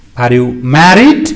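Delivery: pitch rising up on the word "married". Intonation lesson on yes-no questions, rising on married. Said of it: "So that is rising".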